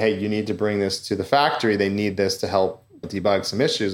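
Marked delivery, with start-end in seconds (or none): none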